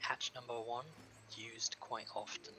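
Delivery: quiet, half-whispered voice. Describing a scene, quoting Vieira pointing out the floor hatch, retelling a half-whisper.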